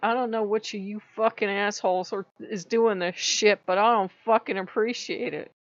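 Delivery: angry yelling in temper. Retelling cleaning up a flood, speaker re-enacts yelling at whoever did it: retelling an angry yell. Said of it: "so I'm yelling".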